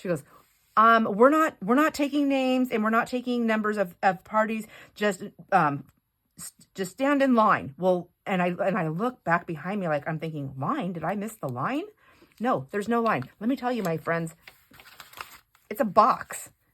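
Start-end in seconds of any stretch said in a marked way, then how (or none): 0.7-7.7 mock-frantic, rattled off in a panic. Retelling what a woman at the counter told the waiting customers, mock-frantic announcement. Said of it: "very frantically".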